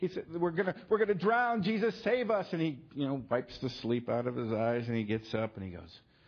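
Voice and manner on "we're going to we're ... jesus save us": acted-out frantic, panicked voice, high pitch. Retelling how the apostles woke Jesus in the storm: imitating a panicked plea. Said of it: "in a panic".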